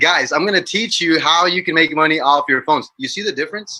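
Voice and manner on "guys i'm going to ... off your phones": confident, self-assured, sure-footed sales pitch. Teaching people how to pitch by contrasting two ways of speaking, demonstrating a confident delivery. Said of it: "you have to be like".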